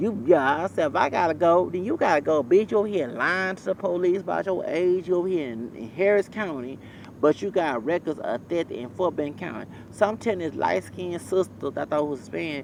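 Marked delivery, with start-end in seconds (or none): none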